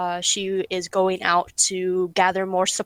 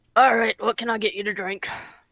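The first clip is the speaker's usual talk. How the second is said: rough half-orc character voice; 3 semitones higher than usual. Voicing a half-orc bartender who greets a player at the bar: half-orc bartender voice. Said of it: "the half orc sees you come over".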